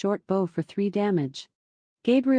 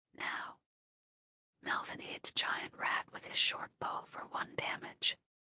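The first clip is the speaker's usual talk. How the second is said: soft, much quieter whisper. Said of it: "when you whisper, I will whisper back".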